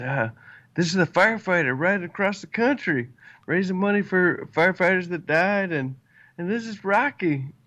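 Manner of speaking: put-on proud, high, excited shouting. Speaker retelling a man announcing him to everyone, retelling a yell. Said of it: "he yells out to everyone".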